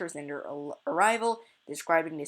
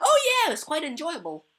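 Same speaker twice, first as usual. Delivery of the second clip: mock dripping sarcasm, pitched very high and loud; 11 semitones higher, 5 dB louder than usual. Explaining a reading passage, acting out the offended character's reply: imitating a character's sarcasm. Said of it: "real sarcasm".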